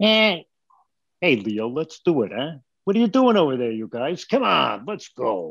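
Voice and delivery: put-on man's voice with New York accent. Asked for one of his show voices, he does Raphael voice, New Yorker guy. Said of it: "He was just a New Yorker guy".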